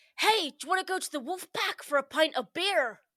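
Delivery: loud, put-on blend of American and Bristol accents. Encouraged by friends, a speaker tries out an accent: mixed American and Bristol accent. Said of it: "That was like a mix of American".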